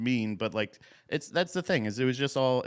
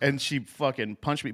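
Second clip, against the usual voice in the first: ordinary talk, nothing marked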